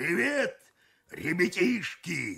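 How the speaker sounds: put-on husky congested wheeze. The cook greets the kids while throwing fish, in a hoarse wheeze from a cold. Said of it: "простуженно сипит кок".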